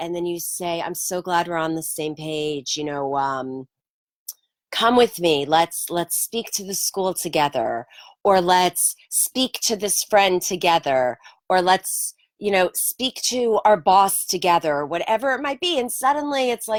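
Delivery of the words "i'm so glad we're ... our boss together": ordinary talk, nothing marked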